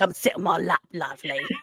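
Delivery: sleazy, creepy dirty uncle voice. Speaker jokes about uncles at christmas, dirty uncle voice. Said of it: "why did your voice go like a dirty uncle".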